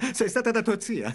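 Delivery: words said through laughter. During an argument over where she has been, a character answers, laughing. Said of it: "Perché ridi?".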